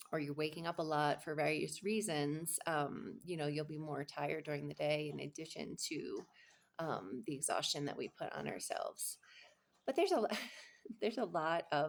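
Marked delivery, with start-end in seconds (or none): 9.8-11.9 talking through laughter, words broken up, pitched up. Explaining reasons for low interest in sex, laughing while talking. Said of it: "I'm laughing because my giant dog".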